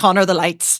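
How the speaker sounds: play-acted exasperated snapping, patience gone. Retelling losing it at the lighting tech on stage: imitating losing her temper. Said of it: "I lost it at one point and I just went".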